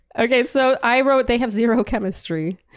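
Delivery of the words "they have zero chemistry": plain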